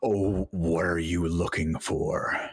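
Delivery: rough, gruff inner voice. Narrating a voice that speaks inside the listener's head, in a booming, gruff, deep voice. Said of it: "a kind of booming, um, gruff and deep voice comes into your head and says".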